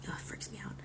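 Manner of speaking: near-whisper, very quiet. Retelling what she said to someone: imitating an almost whisper. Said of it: "almost whisper tone".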